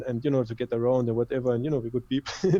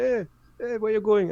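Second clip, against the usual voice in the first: mock shouting, very high screaming voice; 9 semitones higher than usual. Retelling how a ticket-booth lady called after him: imitating a woman screaming. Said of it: "she was screaming".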